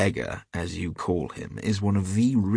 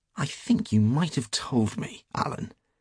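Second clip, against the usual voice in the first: sulky, reproachful tone with pitch raised; 5 semitones higher than usual. One man answers another who just laughed at him, sulky. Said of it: "said Hughie sulkily".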